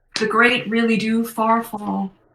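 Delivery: put-on American accent. Heard only by one player, the voice of an old colleague speaks, American accent. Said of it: "it's American accent".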